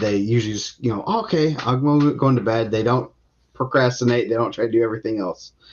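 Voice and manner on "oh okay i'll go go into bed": put-on overly obedient child voice, dripping with sarcasm. Retelling how kids answer when told to go to bed: sarcastically imitating an obedient kid. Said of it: "So that's a little sarcasm".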